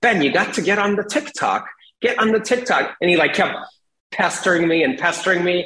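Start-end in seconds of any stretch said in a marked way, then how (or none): 0.0-2.9 put-on British accent, pitched up. Retelling a friend urging him onto TikTok: imitating Chris James's British accent. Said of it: "He has a British accent".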